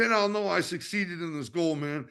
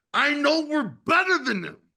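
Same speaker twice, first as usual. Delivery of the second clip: passionate, fired-up delivery full of conviction. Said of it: "to hear that passion in your voice".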